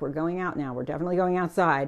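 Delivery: assured, firm, take-charge, in-control voice. Showing how to speak firmly to him when taking him outside: speaking firmly. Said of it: "speak to him firmly".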